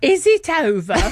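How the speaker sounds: put-on silly northern English accent. Retelling waking up after brain tumour surgery, speaker answers the voices in a ridiculous northern accent. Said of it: "In this incredibly ridiculous northern accent".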